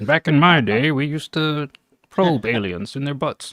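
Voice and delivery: vintage broadcast announcer voice. Riffing on a beat idea about aliens coming: old-timey radio voice. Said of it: "old-timey radio voice talking about the aliens".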